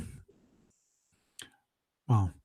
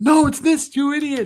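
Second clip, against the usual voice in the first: high-pitched, shrieked mock scream. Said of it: "come screaming at me going".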